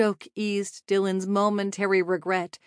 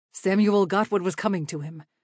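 ordinary delivery

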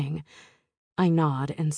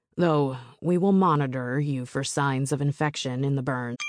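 ordinary delivery, nothing marked

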